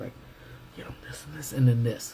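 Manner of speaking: almost whispering. The speaker demonstrates how softly they talk on studio tours: near whisper. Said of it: "pretty much to the point of whispering".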